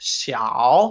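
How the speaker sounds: xiao in dipping third tone, low then rising. Mandarin lesson on little apple, dipping-rising third tone on xiao. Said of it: "小 is third tone, okay? So it dips down and up".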